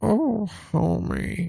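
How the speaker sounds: failed cartoon housewife voice. Listing famous hairdos, the speaker attempts a bad Marge Simpson impression. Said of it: "I can't do the voice".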